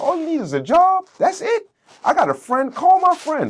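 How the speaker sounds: very high, loud hyped-up voice. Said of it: "my cousin said".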